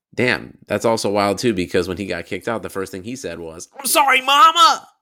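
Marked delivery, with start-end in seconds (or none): 3.8-4.8 put-on boy's voice, higher and louder. Quoting what the kicked-out boy said first: put-on voice quoting the boy. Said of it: "I can't do that voice much longer".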